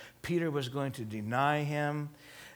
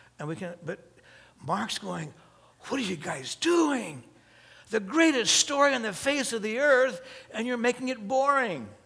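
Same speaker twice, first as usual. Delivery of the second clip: normal talking voice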